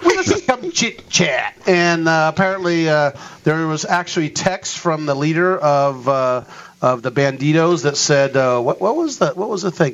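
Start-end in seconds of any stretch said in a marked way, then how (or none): 0.0-1.5 put-on Texas accent. Retelling a gang's wish to chit-chat, the speaker says it in a Texas accent. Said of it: "You got to say it like you're in Texas".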